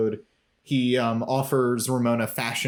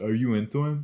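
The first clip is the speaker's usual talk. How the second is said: put-on kid character voice. Imitating how the character Max sounds asking a question: imitating Max's voice. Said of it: "that's what he sounds like".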